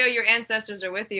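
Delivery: ordinary talk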